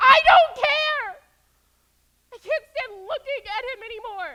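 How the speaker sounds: very loud, shrill, high-pitched yelling. Refusing to calm down after being told she is yelling: yelling loudly. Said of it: "you're yelling so loud".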